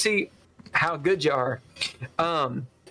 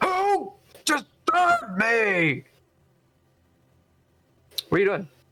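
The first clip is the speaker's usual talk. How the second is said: sudden, high-pitched bellowing captain voice; 9 semitones higher than usual. Game narrator voicing the captain, woken by wrestling downstairs, bellowing captain. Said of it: "a bellow from the captain".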